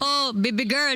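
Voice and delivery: put-on poorly done Filipino accent. Imitating how people talk, in a bad Filipino accent. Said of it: "I could say the Filipino accent".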